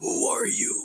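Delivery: breathy, dark, shadowy whisper. Showing a listener how a character sounds in shadow form: shadow-form voice. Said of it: "That's what he sounds like".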